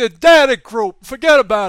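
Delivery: very loud put-on New York Italian mobster accent. Reading out news figures, the speaker riffs in a New York Italian mobster accent. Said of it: "New York Italian mobster".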